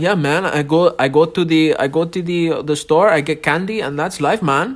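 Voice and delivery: Jamaican-sounding voice. Speaker imitating a two-year-old he knows, in a Jamaican accent. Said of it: "Sounds like he's Jamaican".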